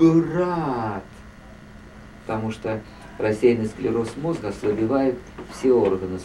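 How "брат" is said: Брат stretched out long and slow, pitched up. Showing how a woman used to speak, slow, drawn-out word. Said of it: "Она говорила очень протяжно, например, вот как... Ну, я одно слово произнесу там".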